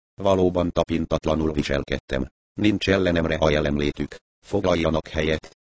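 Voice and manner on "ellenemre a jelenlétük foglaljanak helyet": ordinary delivery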